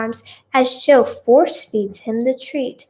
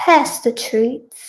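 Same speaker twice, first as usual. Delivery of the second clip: bad attempted British accent. Reading a story aloud, voicing a character's line: attempted British accent. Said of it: "I cannot do a British accent".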